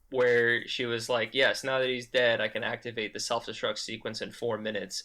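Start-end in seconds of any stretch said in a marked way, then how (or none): none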